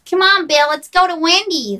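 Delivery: loud, high, put-on American accent. Act out inviting the man you chose to take along, in a put-on American accent. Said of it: "my American accent".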